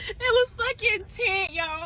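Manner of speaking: high voice, words breaking up with laughter. Telling a story to listeners, laughing while talking. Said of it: "I'm laughing myself".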